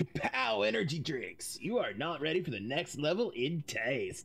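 put-on surfer-boy stoner voice. Acting out a bit, use a surfer stoner voice. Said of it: "giving this a surfer boy act, a surfer voice or a stoner voice".

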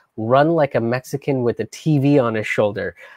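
ordinary talk

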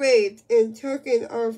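ordinary delivery

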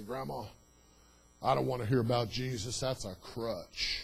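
put-on rough voice. Retelling how the grandson answered Grandma about Jesus, in a put-on rough voice. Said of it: "he had a really rough voice from doing a lot of drug use".

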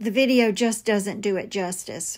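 ordinary talk, nothing marked

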